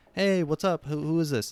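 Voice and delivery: mock cheery, upbeat voice. Explaining how to match a person answering the phone, imitating a happy greeting. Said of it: "if they go really happy".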